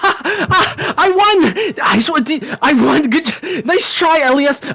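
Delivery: gloating cheer, very high-pitched, slow and drawn-out. Voicing a dwarf woman who raises her hands at the race's end: dwarf woman cheering a win. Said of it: "she raises her hands in the air. She's just like".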